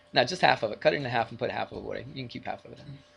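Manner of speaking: soft, sarcastic, teasing tone. Speaker in a math lesson telling listeners to put something away, sarcastic. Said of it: "I'm being sarcastic".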